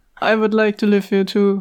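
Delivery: flat, dull, boring monotone delivery. Reading a story aloud, asked what voice to give a character: monotone, boring. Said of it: "monotone, boring".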